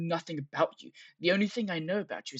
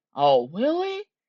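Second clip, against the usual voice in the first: very loud, pitched-up, eagerly hopeful tone; 9 semitones higher, 8 dB louder than usual. Replaying a line from a call, imitating a hopeful tone. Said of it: "He's so, so hopeful".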